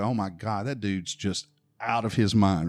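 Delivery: ordinary delivery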